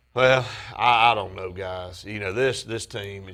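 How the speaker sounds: put-on, mock-depressed voice. Imitating a guest answering a question: imitating Bob Kesselin sounding depressed. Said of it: "it sounded like the most depressed".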